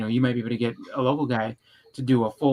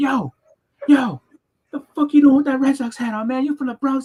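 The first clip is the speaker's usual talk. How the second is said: very high, loud, acted-out shout; 13 semitones higher, 6 dB louder than usual. Retelling how a dude in line yelled: imitating a man yelling. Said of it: "the dude yelled at me".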